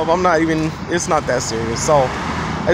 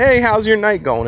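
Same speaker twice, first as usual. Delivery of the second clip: mock sarcasm, openly laid on, pointed sarcastic tone; 4 semitones higher than usual. Retelling what they said to a woman who pushed them; retelling a sarcastic greeting. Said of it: "In a sarcastic way".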